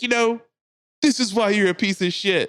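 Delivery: play-acted hollering, high-pitched and yelled. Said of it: "yells at her from the top steps".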